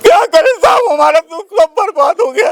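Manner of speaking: high, loud tearful wail of grief. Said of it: "आप रोइए मत।".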